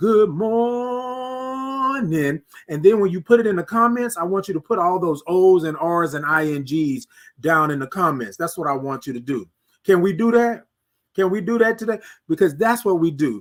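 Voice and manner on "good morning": high, emphatic, heartfelt, "morning" drawn out. Showing first-time viewers how to greet: saying it like you mean it. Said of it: "say it like you mean it".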